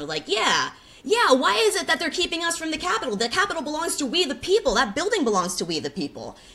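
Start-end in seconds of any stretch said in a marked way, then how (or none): 0.3-4.8 very high, agitated, swooping, riled-up voice. Recounting a crowd near the capitol getting riled up; imitating a riled-up crowd. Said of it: "everyone in the crowd was getting all riled".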